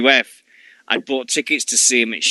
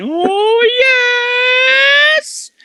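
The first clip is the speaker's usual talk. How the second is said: "oh" very high-pitched and drawn out long; 6 dB louder than usual. Remembering a wrestling manager's high voice: Paul Bearer high voice. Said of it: "I just remember his high voice".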